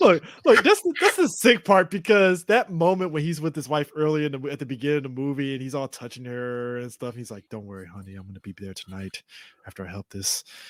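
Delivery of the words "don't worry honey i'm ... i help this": very low, soft, gentle, sweet-talking hush. Describing a movie scene, mimicking the husband talking to his wife: imitating a very soft voice. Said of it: "that is the most softest voice ever".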